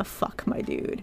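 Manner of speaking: very quiet, slow, whispered under-breath mutter. Retelling a reaction to the assistant manager: retelling an under-breath mutter. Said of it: "under my breath going".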